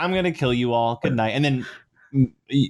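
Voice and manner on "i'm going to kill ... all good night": plain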